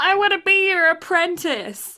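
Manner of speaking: tiny, small, high squeak of a voice. Telling a story, a tiny character pipes up from behind the heroes: squeaky little Miyano voice. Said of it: "a little voice squeaks from behind them".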